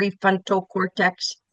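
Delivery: mechanical, robot-style delivery. Teaching the thinking brain, the speaker has the group say the term: robot voice. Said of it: "we say it like a robot".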